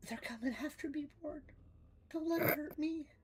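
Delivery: sweetest tiny voice, very high and soft. Playing a character speaking to Rorn, in the sweetest little voice ever. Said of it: "the sweetest little voice ever".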